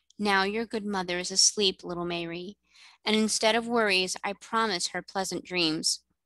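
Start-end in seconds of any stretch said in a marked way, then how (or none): none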